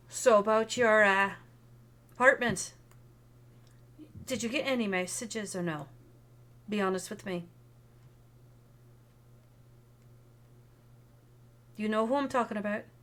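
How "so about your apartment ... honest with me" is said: put-on direct delivery in a near-Irish accent. Retelling how a woman questions you face to face, in an almost Irish accent. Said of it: "almost an Irish accent going on".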